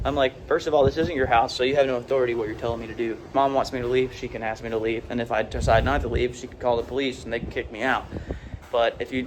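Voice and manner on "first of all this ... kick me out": ordinary delivery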